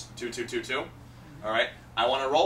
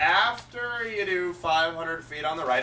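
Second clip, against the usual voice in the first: slow, higher, dragged-out delivery. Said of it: "I'll say it real slow too to really drag it out".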